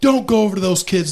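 put-on fierce, high-pitched angry scolding. Retelling the wife exploding at a woman over the neighbor kids, imitating angry scolding. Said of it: "She's lighting her up".

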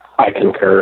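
solemn, dead earnest, grave, serious voice. Agreeing about Ohio while frowning an eyebrow, most serious tone. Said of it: "in my most serious voice".

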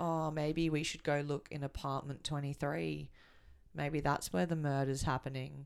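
flat, unanimated, dead-level monotone. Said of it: "who talks like this".

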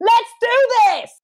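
very high, loud coach-style shout. Recounting what she yelled to her husband, yelling in coachy voice. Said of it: "yell, / in my coachiest voice".

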